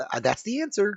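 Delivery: unsure, rising question-like lilt on answer. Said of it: "weird inflection to it".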